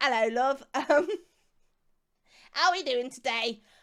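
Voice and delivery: put-on Cockney accent. Saying people assume they're either posh or Cockney, the speaker tries a Cockney accent. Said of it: "that's about as Cockney as I can get".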